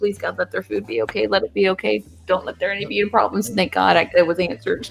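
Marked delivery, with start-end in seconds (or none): 0.0-3.5 put-on anxious, desperate voice. Retelling a silent prayer that the food is fine: imitating own anxious prayer. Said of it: "I was praying".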